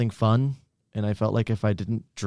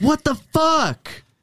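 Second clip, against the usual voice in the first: very high, loud, shrieking scream; 6 dB louder than usual. Telling a story about hurting a man, acting out his scream. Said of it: "he just screams".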